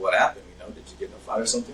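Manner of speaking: ordinary talk, nothing marked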